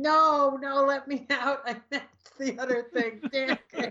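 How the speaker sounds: pitiful, high, pathetic screaming outburst. Retelling the villain left behind at the end: imitating Calendar Man screaming.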